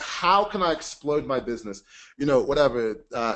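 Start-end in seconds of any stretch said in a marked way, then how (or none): none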